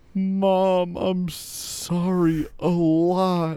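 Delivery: put-on high, slow, teary crying child's whimper.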